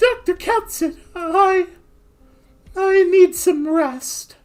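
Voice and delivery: very high, squeaky cartoon voice. Voicing Amiya while reading a game story: Mickey Mouse voice. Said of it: "Amiya gets Mickey Mouse".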